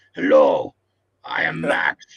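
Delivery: very low-pitched, slow, heavy, dragging voice. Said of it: "That's a good impression".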